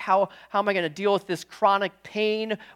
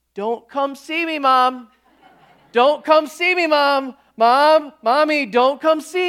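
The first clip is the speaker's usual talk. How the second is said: put-on little child's voice, higher and louder; 6 semitones higher, 4 dB louder than usual. Retelling a child calling out to her mom: imitating Kathleen's little voice. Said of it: "And Kathleen's little voice says".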